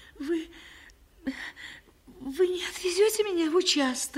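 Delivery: hesitant, unsure, high-pitched voice. A girl asks the woman who invited her for tea, uncertainly. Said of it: "неуверенно спросила она".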